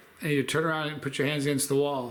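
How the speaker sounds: ordinary delivery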